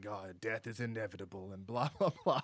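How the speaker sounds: creepy, low, hushed, soft voice. Describing a horror film's coroner, the speaker mimics him in a creepy Tony Todd voice. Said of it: "got that creepy, really voice".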